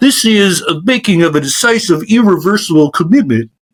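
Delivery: put-on nerdy, scholarly historian voice. Imitating commentators talking about it: nerdy historian voice. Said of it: "this is my, my nerdy historian voice".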